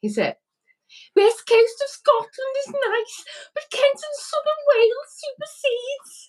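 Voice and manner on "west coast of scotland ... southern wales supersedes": put-on woman's Scouse accent, very high. Asked to read a quote out in the woman's Scouse accent: woman's Scouse accent. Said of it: "it in the woman's Scouse accent".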